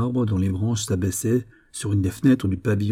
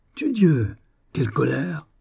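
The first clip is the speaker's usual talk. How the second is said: mocking, scornful, high sneering snicker; 5 semitones higher than usual. An officer answers a woman who spurns his love, sneering. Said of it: "ricana l'officier".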